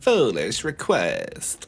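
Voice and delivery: swooping dark elf woman's voice. Gaming chat about a Skaven army, quoting a dark elf: random dark elf lady voice. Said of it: "says random dark elf lady".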